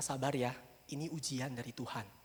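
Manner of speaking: gentle, soothing tone.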